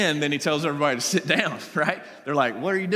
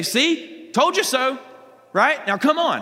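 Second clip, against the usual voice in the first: put-on sarcastic snark, slow and pitched up; 9 semitones higher, 4 dB louder than usual. Imagining aloud what followers said, acting out their attitude for listeners. imitating a snarky tone. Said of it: "I just imagine this snarky tone".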